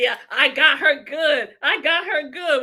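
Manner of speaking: play-acted smug gloating broken by giggles. Imitating a woman gloating over beating the speaker: imitating someone gloating, laughing to herself. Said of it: "laughing to herself like an idiot".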